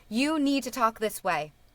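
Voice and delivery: ordinary delivery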